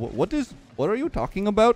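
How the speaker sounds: put-on mimicked Indian accent. Describing a guy who does an indian accent, quoting him in that accent. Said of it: "does like an Indian accent".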